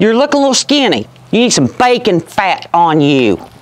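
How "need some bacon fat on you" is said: ordinary talk, nothing marked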